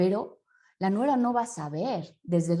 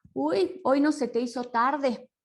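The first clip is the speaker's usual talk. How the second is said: reproachful jab with pitch raised; 6 semitones higher than usual. Explaining tone of voice, the speaker demonstrates greeting guests at home in a reproachful tone. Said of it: "me están reprochando".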